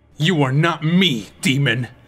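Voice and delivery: defiant, spat out. Link answers Dark Link, who claims to be him; spat in defiance. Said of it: "Link spat in defiance".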